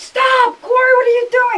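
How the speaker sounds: very loud, shrill, high screaming. Retelling fighting him on the stairs: retelling a loud shout. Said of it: "I was loud".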